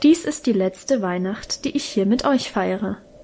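ordinary talk

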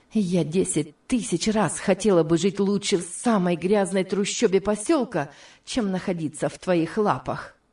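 ordinary delivery

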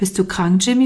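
plain reading voice

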